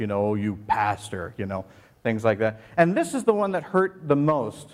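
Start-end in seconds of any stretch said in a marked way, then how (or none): 0.3-1.3 sarcastic tone, as if in scare quotes. Reading out insulting comments, imitating sarcastic commenters. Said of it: "they used it sarcastically".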